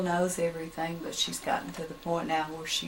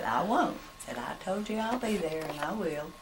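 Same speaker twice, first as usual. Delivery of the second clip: ordinary talk, nothing marked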